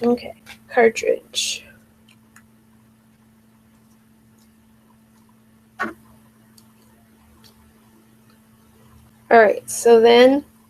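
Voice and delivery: muffled speech with something in mouth. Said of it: "can't understand me with that in my mouth".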